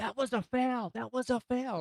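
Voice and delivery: mock very high, drawn-out, protesting yell. Retelling how a player protested after scoring: imitating a player yelling. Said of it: "then just started yelling".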